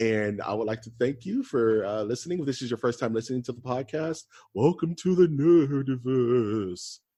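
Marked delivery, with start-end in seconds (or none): 4.5-7.0 put-on ghostly voice, slow, eerie and spooky. Podcast host welcoming first-time listeners: spooky voice. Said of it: "in my spooky voice".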